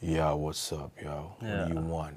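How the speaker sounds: very low, very quiet deep voice. An artist demonstrates changing tone with mood: going low. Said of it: "If I have to go low".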